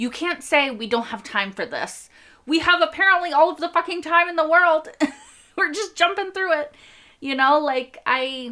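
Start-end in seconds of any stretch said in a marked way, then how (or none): 0.0-6.8 full-on rant, rising into a high-pitched yell. Ranting while sharing someone's frustration at not being told anything, yelling. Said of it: "Sorry. I'm yelling".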